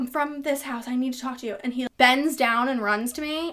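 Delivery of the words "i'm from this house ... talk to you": breathy, soft stage half-whisper under the breath. Retelling running up to a cop, imitating own half-whisper. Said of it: "whispering to him".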